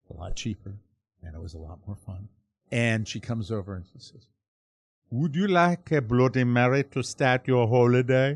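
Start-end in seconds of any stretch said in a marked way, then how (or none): 5.1-8.3 imitated Caribbean accent. Retelling a flight attendant's offer on a plane: Caribbean accent. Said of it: "absolutely gorgeous Caribbean accent".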